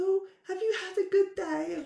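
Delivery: high-pitched, sweet, very polite lady voice. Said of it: "some woman very polite".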